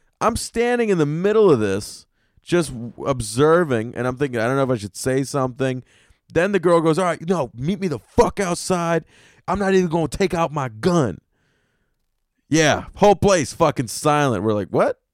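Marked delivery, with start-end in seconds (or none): 7.0-11.2 mock girlish screaming, higher pitch. Retelling what a girl yelled during an argument in the city, imitating a girl screaming. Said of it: "screaming at each other".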